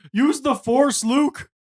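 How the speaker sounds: mock, shrill, very high-pitched yelling. Recalling what the two of them yelled on a ride, retelling yelling a movie quote. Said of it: "we were both yelling like".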